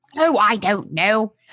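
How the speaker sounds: attempted put-on New Zealand accent. Reading Lucy's response aloud, in your best attempt at a Kiwi accent. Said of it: "in the best Kiwi accent I have".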